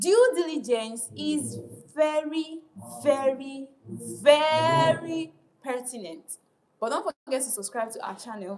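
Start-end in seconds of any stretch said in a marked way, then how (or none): 0.0-6.4 very loud, booming, with long drawn-out "very". Asked to go louder, repeating a line in a loud, raised voice. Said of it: "I'm going to make it even more louder".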